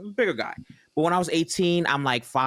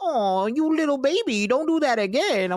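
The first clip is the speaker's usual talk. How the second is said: put-on slow, very high grandmotherly voice; 12 semitones higher than usual. Retelling how a judge scolded gently: imitating a grandma-like judge. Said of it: "talking to me like somebody's grandma".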